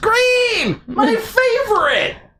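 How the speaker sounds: exaggerated, very high, slow squealing chat voice.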